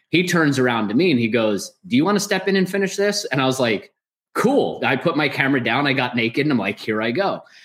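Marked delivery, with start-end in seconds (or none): 1.8-3.2 quick, tossed-off teasing, joking tone, pitched up. Speaker retells what Bob jokingly asked him while filming, retelling a joking offer. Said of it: "And so jokingly".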